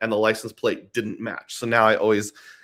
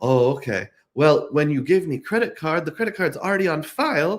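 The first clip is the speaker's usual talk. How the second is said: put-on slight Spanish accent, pitched up; 6 semitones higher than usual. Retelling what a rental desk agent said: imitating a slight Spanish accent. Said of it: "My accent's getting worse and worse".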